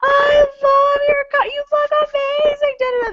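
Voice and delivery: very high, shrill, loud screaming. Retelling calling out to costumed people from many yards away: imitating own screaming. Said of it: "screaming at them".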